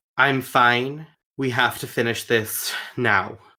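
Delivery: ordinary talk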